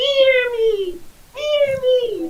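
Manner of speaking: very high-pitched, loud, tiny little creature voice. Voicing a baby copper dragon that the others can hear, in a tiny baby dragon voice. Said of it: "in a little tiny voice saying".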